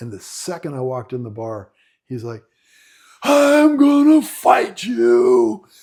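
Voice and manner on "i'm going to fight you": put-on drawn-out, very loud, high, slow drunken jeer. Retelling a drunk man picking a fight in a bar: imitating a drunk man. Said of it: "he was drunk".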